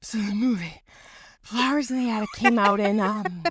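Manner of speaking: slow, plodding, breathless delivery. Retelling how a woman talked, imitating her slow, out-of-breath speech. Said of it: "she was a slow, out of breath talker too".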